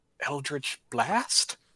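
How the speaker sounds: muttered under the breath, slightly confused. A tabletop player in character, rechecking the book, muttered, slightly confused. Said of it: "say under my breath, slightly confused".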